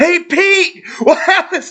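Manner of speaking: very high, shrill yell, words stretched out. Showing how to address a hard-of-hearing musician: yelling. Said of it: "I didn't mean to yell".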